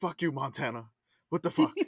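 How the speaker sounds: low, grumbled words muttered under the breath. Retelling getting stuff from state governments at work, imitating cussing under breath. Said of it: "I just start cussing out states".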